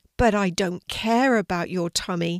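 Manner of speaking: usual speaking voice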